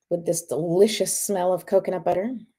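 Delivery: plain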